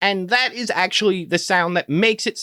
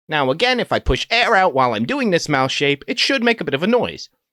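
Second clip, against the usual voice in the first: normal talking voice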